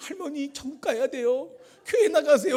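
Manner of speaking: put-on high, crying, pleading voice of a weeping child.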